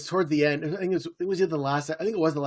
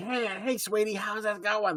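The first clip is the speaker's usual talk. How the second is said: raspy, high, pitched-up busybody voice; 5 semitones higher, 5 dB quieter than usual. Imitating a busybody neighbor from Gilmore Girls: raspy Babette voice. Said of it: "she has the raspy voice".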